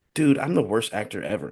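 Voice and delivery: confiding, leaning-in half-whisper. Retelling how an actor leaned over on set: imitating John Malkovich half-whispering. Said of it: "leans over and whispers to Matt Damon".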